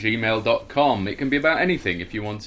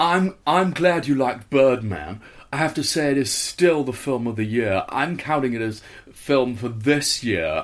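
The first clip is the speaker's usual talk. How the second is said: put-on posh festival-goer voice; 3 semitones higher than usual. Asked to read in a voice, the speaker does a posh festival-goer. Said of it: "There is a posh festival goer".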